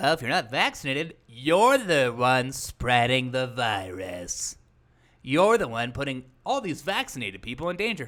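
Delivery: put-on odd, affected, preachy tone, drawn-out "virus". Imitating how the people addressed speak it out, in a weird tone. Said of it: "speaking it out in this weird tone".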